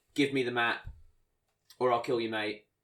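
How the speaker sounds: ordinary delivery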